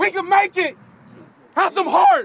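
impassioned, fervent, emotional delivery. Giving a speech to the team before a drill: impassioned speech. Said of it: "gave an impassioned speech".

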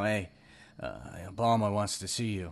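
hushed, shady mob-movie mobster half-whisper. Acting out an imagined mobster in a dark alley: put-on mobster half-whisper. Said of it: "he just whispers to".

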